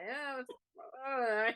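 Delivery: high, slow, drawn-out voice talking while chewing. Speaker acts out what the character Rata says, mock chewing while talking. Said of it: "you can almost hear him chewing something".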